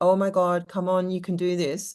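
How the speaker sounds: put-on laughing while talking. Retelling what the business coach said during a breakthrough: imitating someone laughing while talking. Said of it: "And she was laughing, going".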